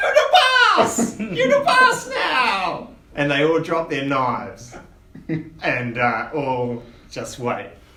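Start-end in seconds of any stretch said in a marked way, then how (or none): 0.0-2.9 very high, awestruck goblin squeal. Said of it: "look at you in awe and say".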